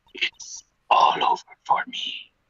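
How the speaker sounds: whispered, breathy, defeated evil-mastermind villain voice, lamenting. Trying out a voice for a line, evil mastermind who lost power. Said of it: "It sounds like an evil mastermind who's lost all their power".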